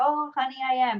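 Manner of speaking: put-on chuckling voice. Retelling how older clients answer a compliment: imitating a client chuckling.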